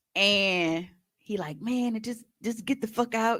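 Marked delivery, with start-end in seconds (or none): 1.6-3.4 irate, worked-up, heated, higher-pitched outburst. Retelling a fight where he yells at the speaker: imitating someone yelling. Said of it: "why is you yelling?".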